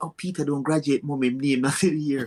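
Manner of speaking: put-on whisper. Retelling telling mom at a graduation his name was missing: imitating own past whisper. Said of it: "I whispered to my mom".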